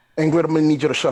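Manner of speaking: sharp, fast, loud snap.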